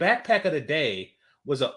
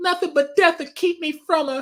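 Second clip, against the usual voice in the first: play-acted very high, loud, tearful wail; 6 dB louder than usual. Retelling a film scene where a character cries: imitating someone crying. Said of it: "and she crying like".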